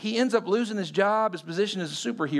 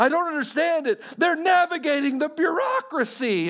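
mock exasperated, high-pitched, frustrated and angry; 9 semitones higher than usual. Retelling a movie scene where the boss complains: imitating a frustrated, angry boss. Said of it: "he's just so frustrated, so angry".

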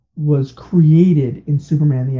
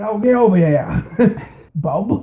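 put-on Australian accent, pitched much higher; 6 semitones higher than usual. Describing an early version of a cartoon hero, Australian-accent Wolverine impression. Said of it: "who speaks with an Australian accent".

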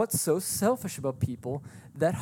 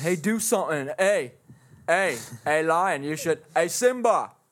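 put-on heckling onlooker voice, louder; 4 dB louder than usual. Imagining a caged lion as a visitor with a hot dog calls: acting a zoo visitor taunting a lion. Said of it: "somebody's eating a hot dog. Looking at you going".

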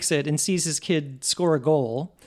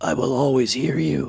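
deep, low, very gravelly voice; 3 semitones lower than usual. Quoting the end of the movie to your co-speakers, do a very gravelly Michael Keaton voice. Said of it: "in the graveliest voice".

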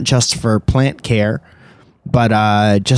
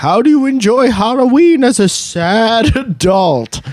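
eerie, high, sad, stretched-out spooky ghost voice; 10 semitones higher than usual. Reading a friend's submitted question aloud as she asked it: spooky voice. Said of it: "Felicia says in a spooky voice".

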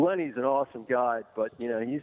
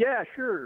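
put-on sarcastic tone, higher; 11 semitones higher than usual. Retelling how a fishing partner sarcastically let someone eat his lunch: imitating a sarcastic reply. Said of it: "And sarcastically, Lenny's like".

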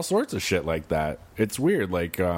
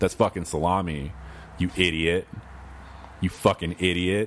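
plain

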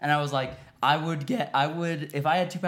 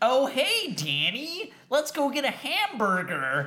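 exaggerated, very high, fake American accent, heavy R's; 10 semitones higher than usual. Describing how an English coworker does American accents: imitating Dean's overdone American accent. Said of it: "Anytime he does an American accent, he always overemphasizes his R's".

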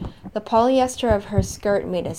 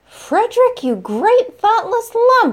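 shrill, piercing, very high, loud shriek; 8 dB louder than usual. Vera addresses Frederick and strikes his upper arm, shrieking. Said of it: "Vera shrieked again".

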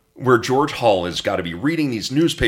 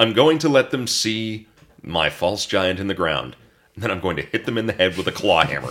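usual speaking voice

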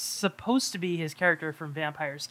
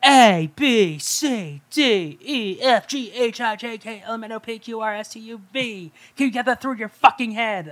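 very slow, loud, hectoring, barked yuppie voice; 5 semitones higher, 6 dB louder than usual. Quoting a movie character yelling at his secretary through the alphabet: yuppie Trumpy voice. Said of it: "this very yuppie, Trumpy voice".

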